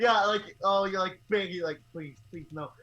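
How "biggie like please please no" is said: plain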